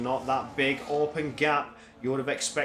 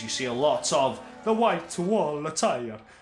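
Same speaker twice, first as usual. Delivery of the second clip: put-on Italian accent; 3 dB louder than usual. Describing a team's tyre strategy in the second stint: put-on italian accent. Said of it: "I had to do the accent".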